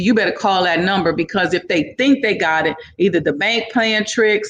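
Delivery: ordinary talk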